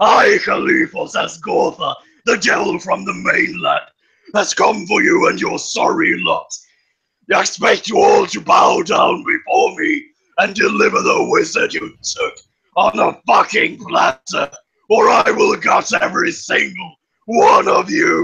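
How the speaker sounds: horrific, very loud, booming demonic voice. Casting thaumaturgy to make the voice boom into the night, booming demonic voice. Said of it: "just booming out this horrific demonic voice".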